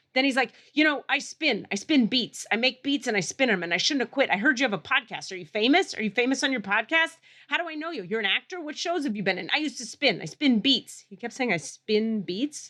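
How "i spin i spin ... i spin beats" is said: mock wired, hyped-up, amped-up hyper babble. Retelling what a hyper man who spins beats kept saying: imitating amped-up talk. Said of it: "he's just amped up as fuck".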